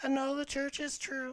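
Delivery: very high, squeaky, shrill ventriloquist-dummy voice. Speaker imitates a little kid prompted by mom at church, Jeff Dunham puppet voice. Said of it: "Jeff Dunham puppet".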